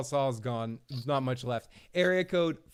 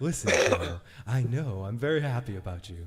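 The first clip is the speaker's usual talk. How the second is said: deep, low, soothing voice; 4 semitones lower than usual. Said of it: "I have to put effects on".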